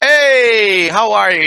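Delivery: loud, very high, cheery, upbeat, long drawn "hey". Demonstrating how to greet people on camera, upbeat and smiling. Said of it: "You can up be upbeat".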